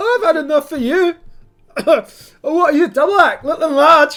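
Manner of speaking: put-on shrill, very high, very loud drunken bellow. Voicing a man who bumped into two people and spilled his tankard, drunk. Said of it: "Probably had a few too many pints".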